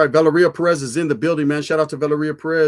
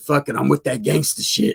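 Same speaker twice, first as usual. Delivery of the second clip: put-on little raspy voice. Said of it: "a little raspy ass voice, huh?".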